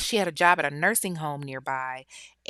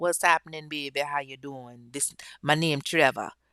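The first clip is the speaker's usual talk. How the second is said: amateur fake Jamaican accent; 3 semitones lower than usual. Telling a story of a man pulling up in a car beside Ebony, in an attempted Jamaican accent. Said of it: "that's the best attempt I can do for a Jamaican accent".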